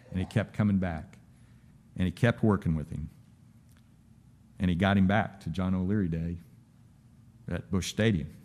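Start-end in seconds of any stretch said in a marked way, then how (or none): none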